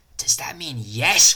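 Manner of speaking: confused, uncertain, puzzled stage whisper. Narrator reads Dr. Ping questioning Rachel, confused whisper. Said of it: "Whispered Dr. Ping, confused".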